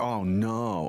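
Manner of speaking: plain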